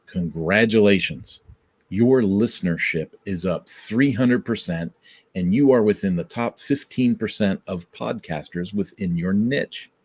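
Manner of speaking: usual speaking voice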